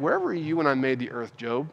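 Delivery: mock sarcastic tone. Retelling the questions asked in the story, mock-sarcastic questions. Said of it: "God goes by asking these really sarcastic questions".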